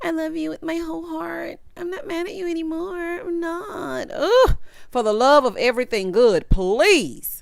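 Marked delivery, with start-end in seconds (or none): 0.0-4.1 put-on high, pitched-up, babyish baby talk voice. Recapping an episode, a host quotes a woman answering an apology: Chelsea's baby voice. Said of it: "she's still talking in her baby voice".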